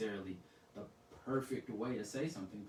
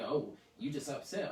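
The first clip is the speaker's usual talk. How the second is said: ordinary delivery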